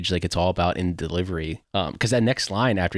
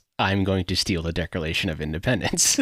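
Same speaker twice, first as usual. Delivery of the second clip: ordinary delivery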